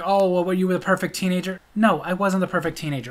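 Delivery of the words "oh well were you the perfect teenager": plain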